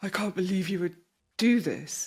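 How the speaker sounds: mock shocked, outraged gasp. Imitating family members reacting to someone speaking up: imitating shocked pearl-clutching. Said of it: "clutches their pearls and goes".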